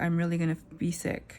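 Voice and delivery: normal talking voice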